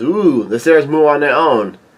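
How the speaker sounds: ordinary delivery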